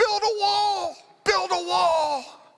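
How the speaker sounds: shrill top-of-the-lungs scream, very high, drawn-out. Retelling how the defending team's coach yelled from across the field: imitating a coach screaming. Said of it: "is screaming at the top of his lungs".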